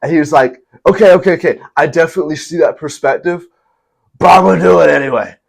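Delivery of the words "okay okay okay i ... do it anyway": put-on tipsy, slurring drunk surfer-dude voice. Quoting a man dying on the cross to his Father, imitating a drunk surfer dude. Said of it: "he sounds like a surfer dude that was drunk".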